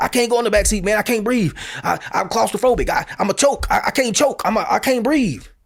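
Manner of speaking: mock-agitated pleading in a man's manner. Retelling what a handcuffed man said while refusing the back seat, imitating him agitated. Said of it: "he's getting agitated and he says he can't breathe".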